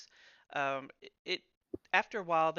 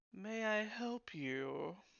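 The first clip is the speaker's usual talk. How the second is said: haughty, dismissive, soft, snooty condescending politeness; 5 semitones higher, 6 dB quieter than usual. In a tabletop game, an establishment's owner greets the unwelcome players: snooty, condescending. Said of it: "like you really don't belong here".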